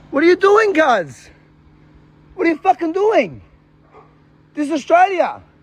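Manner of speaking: genuinely furious, real anger. Confronting someone peeing on the ground: real anger. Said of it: "you could tell the anger is real".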